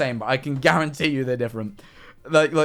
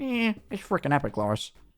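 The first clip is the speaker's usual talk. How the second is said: cartoon character voice with swooping, swinging pitch; 4 semitones higher, 7 dB quieter than usual. Showing how a voice actor shifts his mouth: Peter Griffin voice. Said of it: "moves his mouth to the side for Peter".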